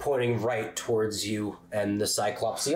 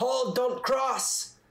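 very high, shouted yelling; 13 semitones higher than usual. Voicing a commander ordering troops not to cross: yelling a command. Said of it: "Anton yells out".

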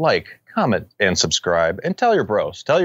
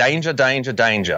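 put-on Aussie Australian accent; 3 semitones higher than usual. Claiming to do australian, then showing it: put-on australian accent. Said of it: "I can do Australian".

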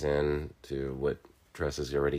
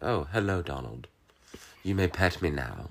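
put-on British accent cat voice; 3 semitones higher than usual. Voicing a pet gray cat, as pictured in one's head: British accent voice. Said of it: "in my head, she always had a British accent".

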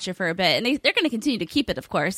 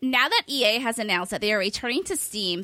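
deliberately irritating, grating, annoying put-on voice; 3 semitones higher than usual. Reading out a reader's question in a deliberately annoying voice. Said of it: "I'll read it in a voice that's very annoying".

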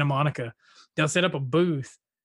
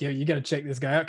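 normal talking voice

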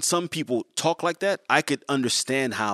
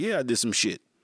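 careless, unbothered, nonchalant, callous tone. Retelling a defendant in the courtroom: imitating courtroom nonchalance. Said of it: "nonchalance, callousness in the, the courtroom".

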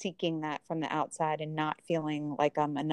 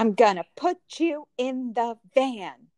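loud, high-pitched scolding voice; 7 semitones higher, 5 dB louder than usual. Asked to imitate someone's mom, do an impression of a mom with naughty kid. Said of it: "Can you do the impression of my mom when I was naughty".

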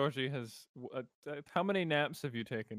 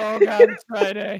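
panicked voice, higher and louder; 8 semitones higher, 19 dB louder than usual. Retelling how Georgie reacted on realizing the day: imitating Georgie panicking. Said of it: "Georgie is panicking".

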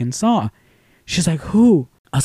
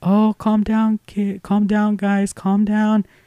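sweet, high, gentle voice; 6 semitones higher, 4 dB quieter than usual. Retelling how a former teacher calmed the kids down: Miss Rangel's sweet voice. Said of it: "still the same sweet voice".

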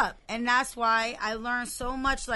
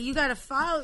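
ordinary delivery

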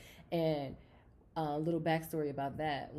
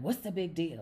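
put-on irritated, angry, dismissive, snapping voice; 4 dB louder than usual. Retelling a spouse's reply during an argument: imitating someone snapping angrily. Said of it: "He got mad at me".

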